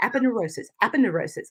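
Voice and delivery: soft, quick "aponeurosis" repeated three times fast. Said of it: "say it three times fast".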